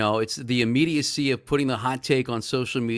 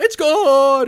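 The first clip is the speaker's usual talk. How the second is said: put-on football announcer voice, higher and louder; 14 semitones higher, 9 dB louder than usual. Showing the impression everybody does of a football call: Merrill Reese impression. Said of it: "everybody does a Merrill impression".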